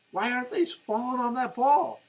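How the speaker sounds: put-on very high, shrill, acted-out scream. Retelling watching the game with friends, imitating own screaming. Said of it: "I'm screaming to my friends".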